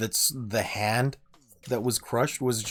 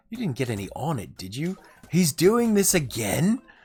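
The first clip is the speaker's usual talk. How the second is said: jokey, quipping delivery in Australian comic style; 5 semitones higher, 3 dB louder than usual. Retelling a skit's counselor reacting to a girl: Australian humor way. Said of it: "in that very kind of Australian humor way".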